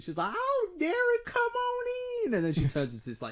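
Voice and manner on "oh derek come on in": put-on very high, very slow, sweet old lady voice. Retelling a Baldur's Gate hag greeting a guest: imitating a sweet old lady. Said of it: "this very sweet lady".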